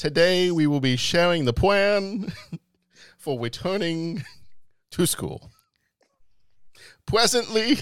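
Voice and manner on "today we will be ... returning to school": put-on higher, drawn-out movie-priest pulpit voice. Joking about how the script will start to sound, doing a Princess Bride priest impression. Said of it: "start sounding like the priest from Princess Bride".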